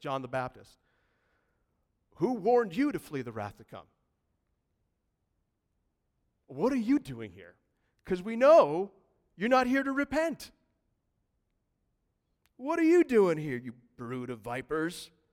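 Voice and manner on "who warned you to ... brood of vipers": louder, sarcastic tone. Retelling a prophet's question to religious leaders: imitating a sarcastic question. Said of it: "sarcastically he asks this".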